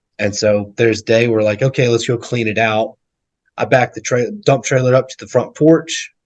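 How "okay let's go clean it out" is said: ordinary talk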